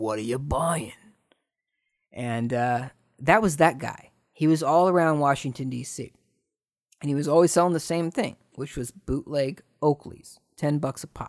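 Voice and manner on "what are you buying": murmured like a back-alley vendor. Recalling a video game character's catchphrase, Resident Evil 4 Merchant voice. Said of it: "he said".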